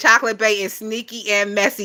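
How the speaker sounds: usual speaking voice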